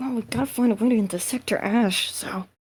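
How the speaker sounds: hushed, secretive half-whisper, put-on. Playing a character half-whispering to another so nobody notices: half-whispering in character. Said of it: "I whispered that to him".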